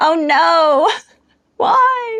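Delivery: very high, tearful, crying, pleading, not drawn out. Retelling own reaction to an animal dying on a show: imitating own crying. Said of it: "there crying, being like".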